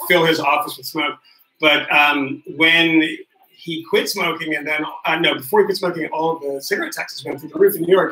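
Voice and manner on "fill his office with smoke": plain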